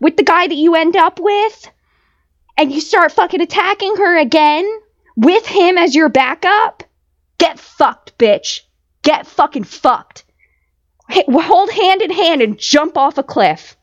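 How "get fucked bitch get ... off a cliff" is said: furious, pissed-off cursing tirade, boiling over with rage. A viewer reacting to someone attacking her again: furious ranting. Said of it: "I'm so pissed".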